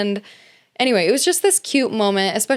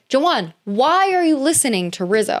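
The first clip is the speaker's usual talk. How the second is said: mild, restrained, held-back yell; 4 semitones higher than usual. Retelling reacting to Jawan while watching the episode: imitating own screaming. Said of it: "I'm screaming".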